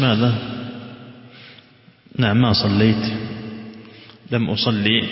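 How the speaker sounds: ordinary delivery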